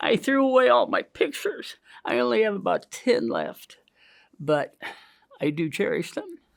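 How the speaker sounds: crying through the words. Recalling out loud how depressed you got in 1974, weeping.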